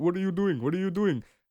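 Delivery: put-on speaking with Haitian accent. Retelling men in a car asking what was going on: imitating a slight Haitian accent. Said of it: "a bit of a Haitian accent".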